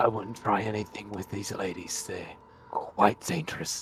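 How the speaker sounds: hushed, soft in-character whisper. Playing a character warning a leader in his ear: whispering in character. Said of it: "kind of whisper in his ear".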